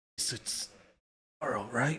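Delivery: weary strained character voice. The game master voices Bupito after heavy damage: Bupito's tired, strained voice. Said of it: "in his tired, strained voice".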